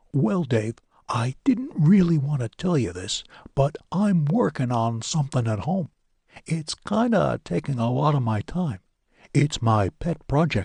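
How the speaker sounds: hushed, low volume. Reading a story, a character quietly confides a secret: quietly divulging a secret. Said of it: "as he quietly divulged this info".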